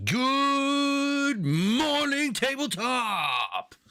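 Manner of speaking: "good" pitched way up and stretched out. Greeting viewers at the start of a stream: Robin Williams impression. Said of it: "should I try to do Robin Williams?".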